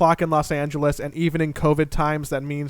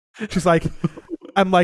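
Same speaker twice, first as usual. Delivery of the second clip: plain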